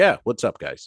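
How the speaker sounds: play-acted relaxed, unbothered, very calm tone. Retelling how a man answered security guards: imitating a very calm, cool reply. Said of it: "Very calm and cool".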